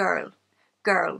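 put-on the word "girl" said with Irish accent. Showing the one word the speaker can say in an Irish accent. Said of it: "I can say girl in an Irish accent".

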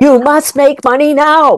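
put-on yelling. Retelling how he yelled at the speaker on the sixth day: imitating someone yelling. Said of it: "literally yelling at me".

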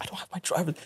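quiet understated speech. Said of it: "just really low key".

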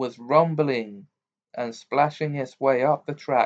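ordinary delivery

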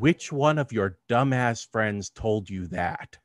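low-key, understated delivery after a long pause. Retelling what was heard after a long pause: imitating a very quiet voice. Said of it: "And then very quietly".

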